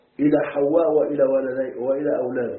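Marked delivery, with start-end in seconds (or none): none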